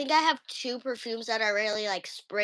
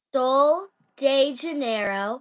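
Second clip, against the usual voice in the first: said a little slower; 3 semitones higher, 4 dB louder than usual. Repeating a perfume name after being asked to: said a little slower. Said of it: "you gotta say that a little slower".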